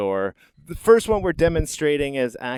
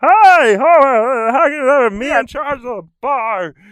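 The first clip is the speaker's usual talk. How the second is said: back-of-throat cartoon voice, much higher, louder; 10 dB louder than usual. Explaining voice placement to the other speaker, demonstrating a Barney from The Simpsons voice. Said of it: "all back here in the back of in the back of the throat".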